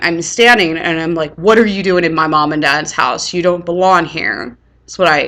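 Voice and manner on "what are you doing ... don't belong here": ordinary talk, nothing marked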